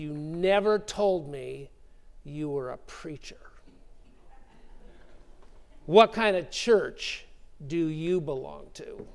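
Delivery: acted, slightly snippy, challenging tone with attitude. Retelling how the owner questioned Tony about being a preacher, quoting with a little attitude. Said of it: "said this with a little attitude in his voice".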